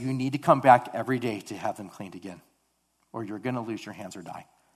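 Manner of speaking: ordinary delivery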